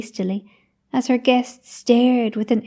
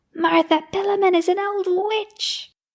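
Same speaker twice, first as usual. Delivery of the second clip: put-on very high, shrill, cracked old-woman voice; 10 semitones higher than usual. Narrator voicing a woman as she hobbles away through a farmyard: shrill, cracked voice. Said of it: "she shrilled out in her cracked voice".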